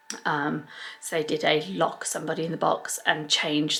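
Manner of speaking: plain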